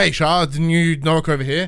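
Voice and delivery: ordinary talk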